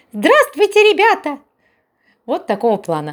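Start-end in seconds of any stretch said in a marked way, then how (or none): 0.1-1.3 put-on very high little kid's voice. Demonstrating a children's voice for voicing work, high child's voice. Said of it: "могу озвучивать детские голоса. Например, вот такие".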